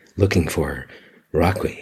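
sultry, seductive, sexy smart-speaker voice. Retelling how the TV answers only the speaker, in a sultry, sexy Alexa voice. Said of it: "sultry, sexy voice you have ever heard".

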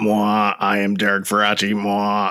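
put-on robotic voice. A show co-host introducing himself by name in a robot voice. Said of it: "This is my robot voice".

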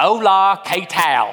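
Spanish spoken in a long Texas drawl. Showing how someone with a Texas drawl sounds speaking Spanish: Spanish with Texas drawl. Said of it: "How does your Spanish accent typically come out?".

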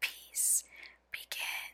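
hushed, very soft, breathy whisper, barely voiced. Leading a repeated-phrase breathing exercise, whispering. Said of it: "And whisper".

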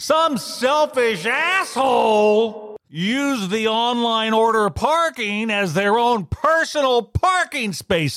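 put-on loud, furious shout. Retelling own words in a restaurant, said very loudly: retelling own past shout. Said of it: "very loudly, I might add".

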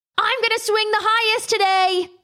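very high, loud shouted call. Narrator reads one classmate's line to another at recess, shouted. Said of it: "shouted Kayes".

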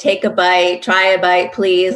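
usual speaking voice

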